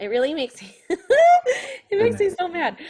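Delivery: talking through laughter. Describing remarks that make the speaker mad, laughing while talking. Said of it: "I don't sound mad 'cause I'm laughing".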